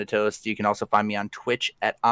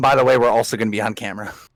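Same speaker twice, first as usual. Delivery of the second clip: ordinary talk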